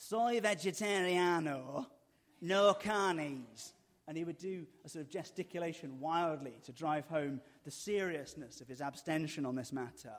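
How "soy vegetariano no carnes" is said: put-on thick Manchester accent, loud and very slow. Retelling Andy ordering food each night, in his thick Manchester accent. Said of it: "in a very thick Manchester accent".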